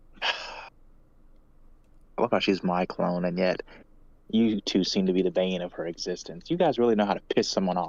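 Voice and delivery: grumbling aside, half to oneself. Speaking in character to two companions: muttering under breath. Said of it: "under my breath".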